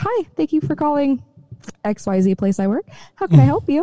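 polite customer service voice. Right after ranting to a coworker, the phone rings and the speaker answers in customer service voice. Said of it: "flipped immediately into my customer service voice".

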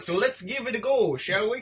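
bad fake Irish accent. Starting to talk about the plot of Leprechaun, in a bad Irish accent. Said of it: "It's my Irish impression".

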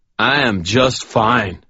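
put-on loud, high drunken slur, words running together. Narrator reads a drunk man answering the narrator's concern; drunken slurring. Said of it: "Chuck slurred".

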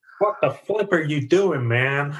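put-on American accent. Retelling how one man calls another out, in a put-on American voice. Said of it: "in his American voice".

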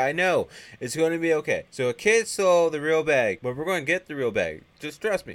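stressed voice, pushed up high and loud. Retelling a scene with Joe and Santa Claus: mock-stressed Santa Claus. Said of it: "you can hear the stress in Santa's voice".

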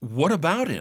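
curious, engaged, interested tone. Demonstrating the question with interest instead of flatly: showing interest. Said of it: "今回は暗く平坦に言わずに興味を示して言ってみる".

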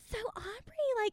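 very high-pitched voice. Quoting a mother asking a question: voice used for my mom. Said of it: "this is the voice I use for my mom".

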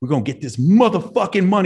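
mock high, fired-up, intense scream. Retelling a pre-stage huddle, imitating cussing at the girls. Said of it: "And I was cussing at them".

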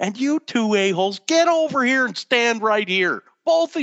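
screamed, bossy, high-pitched, furious. Retelling how a man yelled at two people over the speaker's shoulder, retelling a scream. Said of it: "He just screams over my shoulder".

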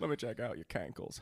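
put-on Southern politician voice. Continuing the mash-up impression bit: Bill Clinton doing Matthew McConaughey. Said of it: "That might be Clinton doing McConaughey".

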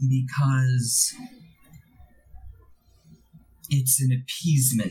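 plain distaste and clear disgust in every word. Voicing a woman explaining why the first drink is given; disgusted. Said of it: "you hear clear disgust in her voice".

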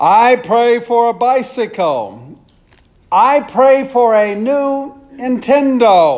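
full-lunged, very slow, high shouted bellow. Telling a joke about boys at bedtime prayers, imitating a child shouting a prayer. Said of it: "pray at the top of his lungs".

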